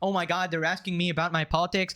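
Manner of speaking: mocking put-on whiny voice. Mocking how Hasan complained about being questioned: mocking imitation of Hasan.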